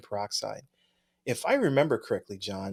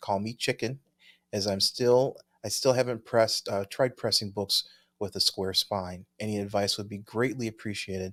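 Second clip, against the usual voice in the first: normal talking voice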